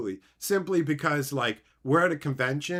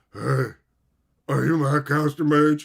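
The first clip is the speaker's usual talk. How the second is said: loud, dopey, clueless put-on idiot voice; 7 dB louder than usual. Retelling surprising someone at a convention: imitating a clueless fan. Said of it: "I wanted to sound like some chud fucking idiot".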